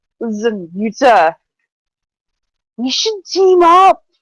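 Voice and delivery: put-on drunk, tipsy-sounding voice. Acting out what she said to Yuta, imitating her drunk voice. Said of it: "This is her drunk voice".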